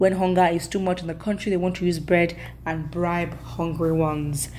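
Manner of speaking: ordinary talk, nothing marked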